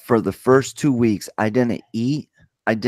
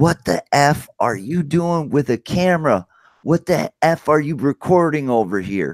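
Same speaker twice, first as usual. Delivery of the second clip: acted, hostile, accusing, angry screaming; 4 semitones higher than usual. Retelling being pulled over by a man in a Dodge Charger; retelling a man screaming. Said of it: "he's screaming at me".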